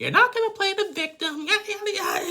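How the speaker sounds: high, loud, mock screaming yell.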